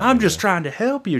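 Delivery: very high, high-pitched yelling outburst. Retelling how a woman at the grocery checkout yelled at a man, retelling a yell. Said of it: "She keeps yelling at it".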